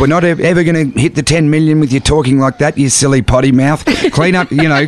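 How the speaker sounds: ordinary talk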